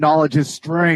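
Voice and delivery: mild, contained yell with a hint of scream. Voicing a kid who screams at the top of his lungs. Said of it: "he screams at the top of his lungs".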